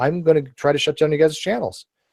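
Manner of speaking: ordinary talk, nothing marked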